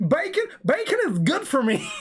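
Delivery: deep south American drawl. Retelling a kid's tantrum over bacon, in a proper deep south American accent. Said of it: "proper deep south American accent".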